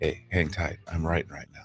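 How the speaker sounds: very low, hushed whispered aside. Recounting how he answered the phone and said this, whispering. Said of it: "why are you whispering to me?".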